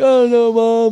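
play-acted tearful sob, pitched very high. Retelling a call to their mom after a divorce, imitating their own crying.

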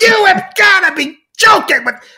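very high-pitched, passionate, angry rant. Retelling a phone call where a caller rants at him: imitating Chris's angry rant. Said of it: "sets him on another 2-minute diatribe".

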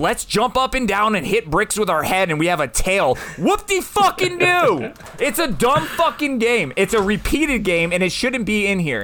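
high-pitched, furious, fed-up, really mad rant. Arguing against someone else's pick, really mad. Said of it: "because I'm really mad right now".

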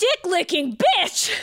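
acted high, shrill screaming outburst at full volume. Retelling getting an IV where the whole waiting room could hear, retelling a scream. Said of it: "the entire fucking waiting room could hear me screaming".

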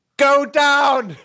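very high, loud scream. Retelling watching a player get tackled: imitating screaming at the TV. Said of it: "I'm screaming at the T V".

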